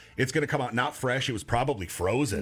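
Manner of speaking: normal talking voice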